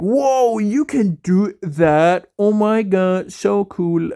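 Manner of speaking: teasing, jokey, acted wonder, very slow, drawn-out, sarcastic. Retelling how others reacted to a sound trick: imitating sarcastic amazement. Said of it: "jokingly, sarcastically".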